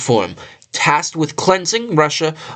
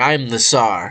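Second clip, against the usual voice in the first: mock boastful, power-tripping tsar voice, lower pitch; 5 semitones lower than usual. Retelling how the tsar saw himself: imitating a power-tripping tsar. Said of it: "He was power tripping".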